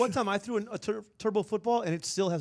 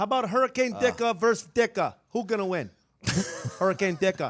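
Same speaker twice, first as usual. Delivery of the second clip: put-on Chicago sports-fan accent; 2 semitones higher, 4 dB louder than usual. Joining friends joking about hurricane names, the speaker puts on a chicago accent. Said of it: "You not a bad Chicago accent".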